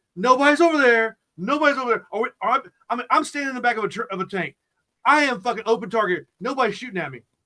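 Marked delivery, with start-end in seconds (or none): 0.2-2.1 shouting again and again. Retelling yelling at teammates to move up: retelling own yelling. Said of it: "I'm sitting there yelling at them".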